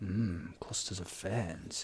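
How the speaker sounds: eerie, put-on, very hushed, very quiet creepy murmur. While adding scenery, the speaker echoes their own remark: creepy voice. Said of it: "I don't know why I go into that creepy voice".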